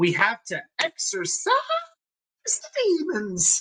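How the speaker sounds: very high voice, breaking mid-phrase. A jets fan speaking about his team, his voice cracking. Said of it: "Sorry about my voice crack there".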